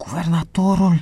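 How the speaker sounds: soft, stunned, disbelieving, astonished. Narrator reading Jim's reply to the guard, astonished. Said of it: "Întrebă Jim uluit".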